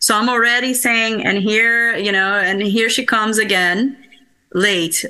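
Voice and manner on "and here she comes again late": ordinary talk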